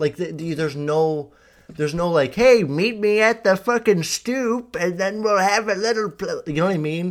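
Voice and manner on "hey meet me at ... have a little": put-on old voice, much higher and louder. Joking about how teens once arranged meetups before phones, old voice. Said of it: "I don't know why I'm doing an old voice".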